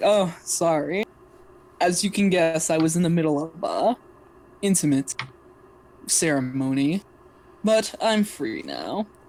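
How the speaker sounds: deliberate, slow character voice, every word drawn out. Voicing Sage approaching the player character: Sage's voice. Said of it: "Sage is gonna approach you like".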